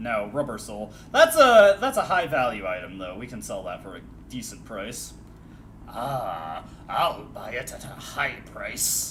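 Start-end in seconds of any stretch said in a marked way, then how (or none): 5.9-9.1 "ah" drawled, soft and very slow. Discussing selling a high value item, speaker answers in an RE4 merchant impression. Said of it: "impressions of the merchant".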